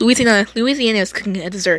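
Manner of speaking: usual speaking voice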